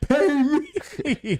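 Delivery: very high-pitched, demanding shout. Retelling a player yelling at the GM during practice: imitating Jimmy yelling.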